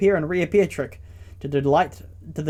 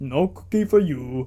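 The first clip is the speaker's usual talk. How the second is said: slow, put-on cartoon monster voice. Telling a cookie jar story, a line done as Cookie Monster impression. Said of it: "That's my best Cookie Monster impression".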